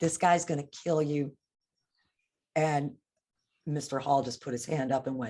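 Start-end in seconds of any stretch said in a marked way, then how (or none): 0.0-1.3 tearful, crying, spoken through tears. Retelling own words said while crying: imitating own crying. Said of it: "I started crying and I said".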